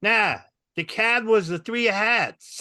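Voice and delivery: put-on drawn-out Boston local accent. Retelling what comedy club audiences in boston say: boston accent. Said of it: "this is what I hear".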